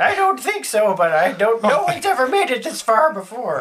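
put-on high-pitched elderly woman's voice. Game master answering the players as the hermit, old lady hermit voice. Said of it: "having rescued the Hermit [name], ... old lady".

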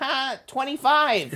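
very high, squeaky cartoon voice. Retelling a TV moment where the voice actor jokes in the SpongeBob voice. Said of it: "in the Spongebob voice goes".

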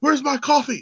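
put-on drunk man's voice, high, screaming. Retelling how a drunk older customer screamed at him, imitating the scream. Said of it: "he starts screaming at me".

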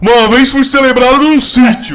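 very loud, high, drawn-out priestly voice. Reading out a line on request, imitating the ex-priest's voice. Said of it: "Faz a voz".

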